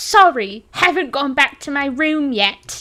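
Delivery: put-on slow, measured English, British accent. Repeating a quote that lives in their head: british accent. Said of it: "I know I said that in a British accent".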